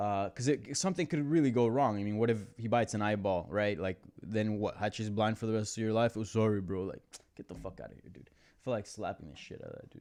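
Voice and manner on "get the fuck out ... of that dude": angry, breathy whispered ranting. Recounting a dog biting his dog on a walk: angry. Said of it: "just talking about it gets me angry".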